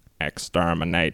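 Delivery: put-on low, robotic alien creature voice. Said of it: "do your best impression".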